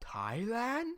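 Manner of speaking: puzzled, uncertain, soft voice with rising tone. Retelling a game chat, a speaker imitates exactly how a player said one word. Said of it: "He says it like that".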